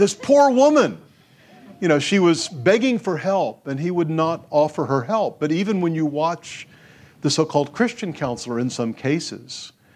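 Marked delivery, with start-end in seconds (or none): 0.0-1.0 high-pitched, shrill, raised yelling outburst. Recounting a man watching a counseling session, imitating him yelling at the television. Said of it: "he started yelling at the television".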